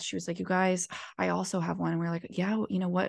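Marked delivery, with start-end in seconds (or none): 0.4-1.9 acted serious deadpan delivery. Retelling how a woman told the group about her own dream, retelling deadpan delivery. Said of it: "Lindsay was like deadpan, so serious to us".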